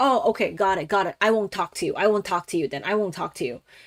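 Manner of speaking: put-on hurt, sulky, offended tone. Retelling how a man answered after taking offense: imitating a hurt, sulky reply. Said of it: "super fucking butthurt".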